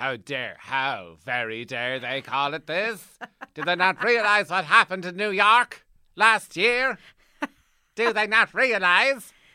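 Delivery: very high, very loud, shrill put-on voice. Voice people's reaction to the title The Two Towers as your fiancée character, a Kara impression. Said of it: "This is my Kara character".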